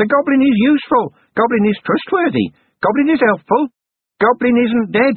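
very high, cracked, wheedling goblin voice. Narrating a goblin's words that only Vimes seems to hear, cracked wheedling goblin voice. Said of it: "The cracked voice wheedled".

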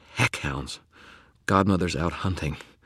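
ordinary delivery, nothing marked

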